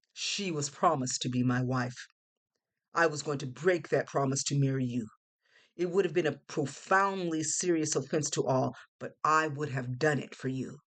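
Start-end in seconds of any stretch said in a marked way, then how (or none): none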